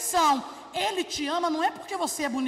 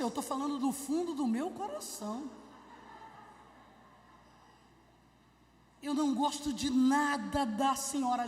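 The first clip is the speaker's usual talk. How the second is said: imitated crying, tearful voice, quieter; 7 dB quieter than usual. Retelling a grandson's complaint about his grandmother: imitating a crying grandson. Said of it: "de lágrimas caindo assim".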